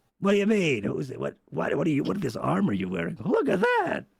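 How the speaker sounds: forced, throat-straining, put-on creature voice. Voicing a character in a game scene: strained put-on character voice. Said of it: "This hurts my voice".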